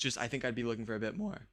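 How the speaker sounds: soft voice cracking mid-sentence. Responding to a job offer, voice cracking. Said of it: "holy voice crack!".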